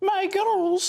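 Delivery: put-on high-pitched Edinburgh accent. Quoting a film teacher's catchphrase: Miss Jean Brodie's Edinburgh accent. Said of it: "as she would say in her Edinburgh, uh, best Edinburgh accent".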